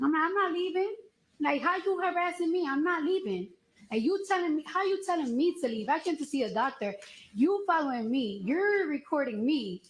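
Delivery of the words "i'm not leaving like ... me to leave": put-on indignant, heated, arguing tone. Retelling an argument with a woman who kept telling her to leave the building, retelling a screaming argument. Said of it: "We're literally screaming at each other".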